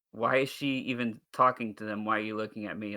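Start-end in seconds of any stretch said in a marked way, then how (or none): none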